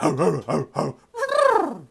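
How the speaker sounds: drawn-out, loud, high, slow swooping horse whinny. Picking a team for a game and cheering: horse impression. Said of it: "That was my horse impression".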